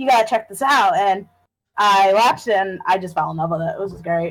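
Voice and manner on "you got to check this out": plain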